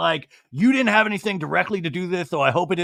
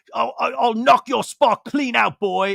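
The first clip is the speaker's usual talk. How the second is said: put-on high, stammering tough-guy voice, threatening; 5 semitones higher than usual. Retelling a reality show fight, imitating Ken threatening. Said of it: "He's like".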